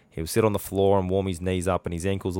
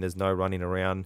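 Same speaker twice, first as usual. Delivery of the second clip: normal talking voice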